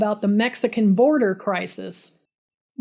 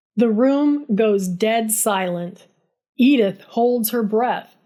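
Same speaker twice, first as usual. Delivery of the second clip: plain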